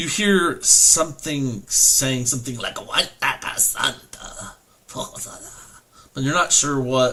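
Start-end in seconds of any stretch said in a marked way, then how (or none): 2.8-4.5 whispered, hushed, breathy put-on goblin voice. Game master voicing a goblin speaking in another language, goblin voice. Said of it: "your goblin voice".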